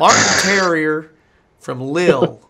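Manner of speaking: loud, put-on Texas-type American accent. Repeating a footballer's name and club in a put-on Texas accent. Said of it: "the most Texas type accent".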